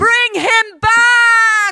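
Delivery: very loud, very high shriek. A mother orders her husband to bring their son back, shrieking. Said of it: "shrieked Erda".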